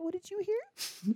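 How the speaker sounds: very high, tiny, squeaky mouse voice. Asking another what they heard, talking like a mouse. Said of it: "Why are you talking like a mouse now?".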